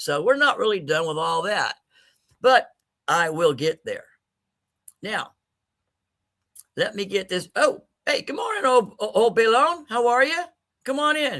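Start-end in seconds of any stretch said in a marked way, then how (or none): 7.5-11.4 cracking voice, much higher. Greeting a visitor in the morning with sinuses acting up, voice cracking. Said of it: "my voice is cracking all over the place".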